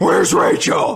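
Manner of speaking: loud, rough, pushed-out superhero voice. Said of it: "so I just went Batman".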